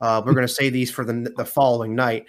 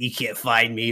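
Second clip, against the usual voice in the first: creepy, scary-movie villain voice. Speaker retells PJ hiding behind a recliner, imitating a scary-movie voice. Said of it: "he's mimicking the fucking scary movie one".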